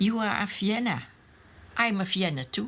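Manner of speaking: ordinary talk, nothing marked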